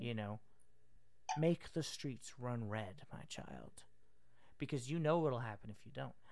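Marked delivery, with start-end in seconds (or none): 1.4-6.1 commanding, authoritative elder's voice. Trying out a voice for a commanding elder: commanding elder's voice. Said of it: "you don't betray the voice of the elder".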